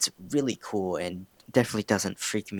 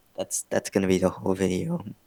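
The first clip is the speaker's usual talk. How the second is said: voice breaking and cracking mid-phrase; 3 dB louder than usual. Explaining plans for a goofing-around video, voice cracking. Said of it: "that voice cracked".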